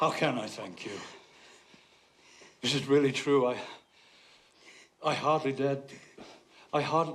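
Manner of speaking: sobbing, crying with broken-off words. Hearing that all charges are dropped: sobbing.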